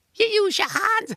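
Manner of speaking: put-on high-pitched voice with English accent. Speaker mocking what people from over there always say, in a high-pitched Ricky Gervais voice. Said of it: "they all sound high pitchy Ricky Gervais".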